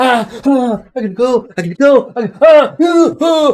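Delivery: shrill, very high, blaring, terrified cries of shock. Narrator voices a man who then starts running, in shock and terror. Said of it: "his eyes are just wide in shock and terror".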